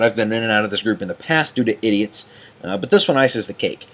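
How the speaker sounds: normal talking voice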